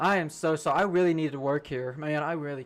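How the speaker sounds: half-hearted, insincere delivery. Retelling apologizing to a plant manager: retelling a half-assed apology. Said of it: "I just start half-assing sorry".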